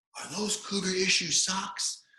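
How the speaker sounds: very high, drawn-out, long-carrying distant shout. Retelling the coach calling out from thirty yards away: retelling the coach's yell. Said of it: "he's yelling at somebody".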